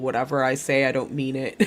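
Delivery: ordinary delivery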